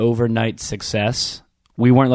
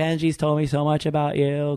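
put-on woman's voice, quieter; 4 semitones higher, 4 dB quieter than usual. Retelling meeting a woman at the side of stage, the speaker imitates her greeting. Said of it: "I am in love with your impression of her".

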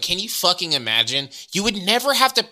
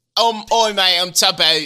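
put-on British accent, higher pitch and louder; 2 semitones higher, 3 dB louder than usual. Chatting about Tubbo turning 18, mock British Tubbo impression. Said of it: "I can say whatever I want about the British".

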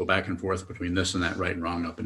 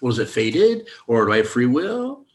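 sarcastic, swooping, rising tone; 5 semitones higher, 6 dB louder than usual. Mocking how people ask whether it is fate or free will: sarcastic mock question. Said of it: "I'm being sarcastic because that's how it sounds".

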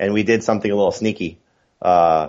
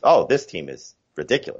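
ordinary talk

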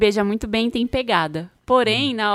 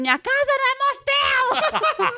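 put-on very high, drawn-out rising yell. Retelling the famous line the mother shouted: imitating a mother shouting. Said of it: "gritou aquela famosa frase".

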